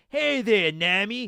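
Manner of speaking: put-on loud, high Brooklyn accent. Speaker recalls how the English dub voiced Sanji: Sanji's Brooklyn accent. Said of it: "he tried to do like the Brooklyn accent".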